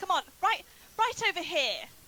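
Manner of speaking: very loud, very high taunting shout. Taunting a monster in character to draw it closer: yelling in character. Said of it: "I'm gonna yell at him".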